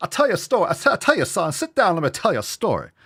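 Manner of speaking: high-pitched cartoon rooster voice. Launching into a story for listeners, Foghorn Leghorn voice. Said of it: "I'm going to tell you this like foghorn leghorn".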